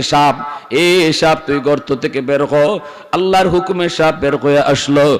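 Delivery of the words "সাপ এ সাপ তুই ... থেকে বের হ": usual speaking voice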